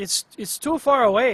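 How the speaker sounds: put-on slow, loud, drawn-out Midwestern accent. Retrying the CEO's line about the location: imitating Logan's Midwestern accent. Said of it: "he's Midwestern, so it'd be like".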